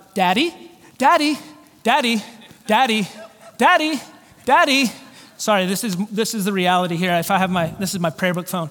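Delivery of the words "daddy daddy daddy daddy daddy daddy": put-on child voice, much slower. A father acting out his daughter calling to him, imitating a child calling daddy. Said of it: "it's like my daughter".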